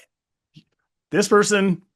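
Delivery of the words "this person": high, loud, belted impressed delivery. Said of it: "And you're like".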